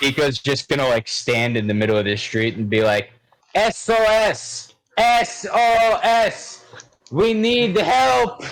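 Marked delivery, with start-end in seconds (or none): 3.5-8.4 very high, slow, drawn-out, booming, full-volume bellow. A player's character stands in the street calling for help, shouting as loud as possible. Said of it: "Just as loud as he can".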